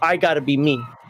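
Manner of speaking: ordinary talk, nothing marked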